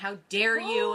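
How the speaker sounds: loud yelling. Retelling how the moms yelled at the son: imitating moms yelling. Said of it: "they start yelling at my son".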